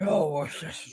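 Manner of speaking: soft, breathy, mumbled mush-mouth voice. Showing the other speaker a voice for a character: mush mouth voice. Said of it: "you're sort of just doing mush mouth".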